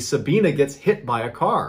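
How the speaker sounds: normal talking voice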